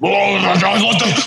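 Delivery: very low-pitched voice.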